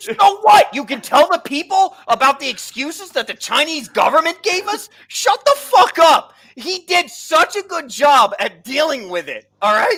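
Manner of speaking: fired-up, heated, high-pitched ranting shout. Arguing over another speaker, telling him to shut up: fired up, yelling. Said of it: "Firth is uh, fired up".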